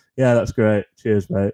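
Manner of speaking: flat deadpan monotone, same level tone throughout. Speaker shows how everything they say comes out, in a flat deadpan tone. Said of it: "comes out in the same sort of flat tone".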